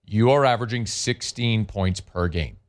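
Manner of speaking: slow, deliberate, each word spaced out and drawn out. Criticizing a team's offense, saying the statistic again, slowly. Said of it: "Let me say that again slowly".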